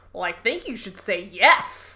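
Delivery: weirdly sarcastic, condescending, swooping delivery. Recounting a scene where Jake asks for advice, mimicking Michael's sarcastic delivery. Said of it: "this very weirdly sarcastic delivery of the line".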